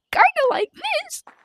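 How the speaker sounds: squeaky, very high-pitched robotic voice. Describing a yellow gorilla's voice in a game: high-pitched robotic voice. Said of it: "the same robotic voice, but just a little more high pitch".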